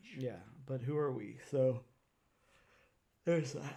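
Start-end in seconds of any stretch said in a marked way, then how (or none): 1.5-3.8 speaking through a yawn, slower. Podcaster wrapping up a point to a co-host, yawning. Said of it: "have to yawn there".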